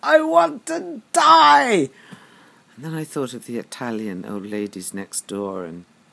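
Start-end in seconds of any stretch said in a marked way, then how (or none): 0.0-1.9 very loud, very high, very slow yell, die stretched. Speaker acts out what they once shouted out, retelling a shout. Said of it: "And I just shouted out".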